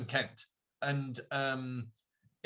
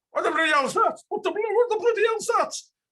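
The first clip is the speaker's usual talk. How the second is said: shrill, very high, very loud booming shout; 10 dB louder than usual. Doing the voice of a character off Gogglebox: imitating a Gogglebox character. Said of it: "I'll do the voice".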